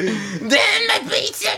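very high, slowed, drawn-out furious cry. Retelling someone throwing weights around: imitating someone raging. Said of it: "throwing the fucking weights around, like".

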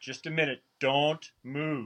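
clumsy, bad, fake put-on South African accent. Retelling what a man said to him, in a very bad South African accent. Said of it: "I'll do a very bad imitation of a South African accent".

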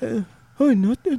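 acted timid quiet mumbling. Retelling how Herbert answered a greeting: imitating Herbert's shy quiet mumble. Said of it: "He talked just like that".

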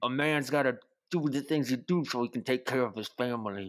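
tight voice, talking with the jaw jutted out. Telling a story, the speaker imitates a man talking with his jaw jutted out tight. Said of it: "He just puts his jaw out real tight".

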